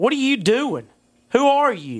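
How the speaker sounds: put-on old woman voice, stern and angry from the start. Retelling being caught, the speaker voices Grandma confronting him: imitating a stern grandma. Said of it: "This is a stern".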